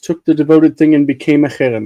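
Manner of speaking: ordinary talk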